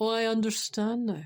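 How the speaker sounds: dry, mocking sarcasm with fake understanding. Answering an imagined reply about not giving compliments: sarcastic. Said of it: "I know that sounded sarcastic".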